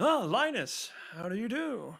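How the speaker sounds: put-on old man voice, high and slow. Voicing a magic item that speaks in the old man's voice. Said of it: "it says the same voice as the, uh, old man?".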